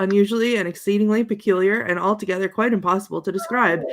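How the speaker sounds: ordinary delivery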